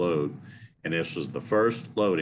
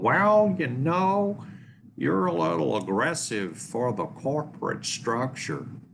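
put-on accent from Cincinnati; 10 semitones higher than usual. Retelling what the VP of Ops told the speaker in his office, in his best Cincinnati accent. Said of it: "in his best Cincinnati accent".

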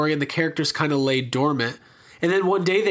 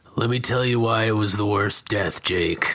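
put-on gruff older man voice, lower; 7 semitones lower than usual. Doing a Mike impression from Breaking Bad: Mike impression. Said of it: "that's my Mike impression".

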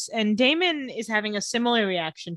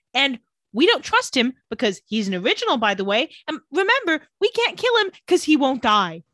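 plain

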